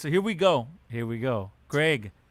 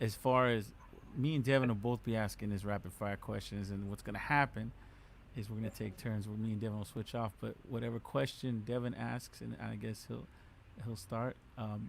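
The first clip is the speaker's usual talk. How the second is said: soft, low, sad, somber delivery. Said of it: "Don't be so sad about this".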